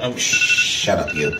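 low, slow, soft muttered voice.

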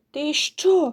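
scared, frightened outcry. Narrator reads a girl's line to a boy standing in her room, frightened cry. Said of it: "перелякано скрикнула дівчинка".

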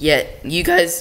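cracking, breaking voice. Addressing viewers about a serious matter, voice cracking. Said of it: "voice cracked".

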